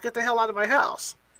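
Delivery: ordinary delivery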